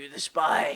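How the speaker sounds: low, gravel-voiced stage whisper. Retelling how a man came right up to Evan and spoke: mock gravelly whisper. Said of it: "whispers in kind of a gravelly voice".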